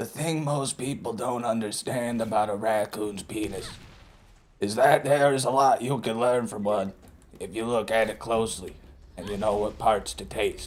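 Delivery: put-on raspy politician voice. Doing a bad RFK impression for a joke line. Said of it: "I do a bad R F K impression".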